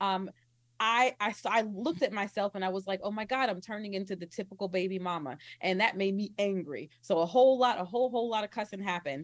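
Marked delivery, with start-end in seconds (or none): none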